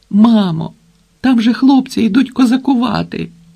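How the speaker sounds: high, begging, imploring, pleading tone. A boy calls to his mother, pleading. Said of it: "благально почав Сенько".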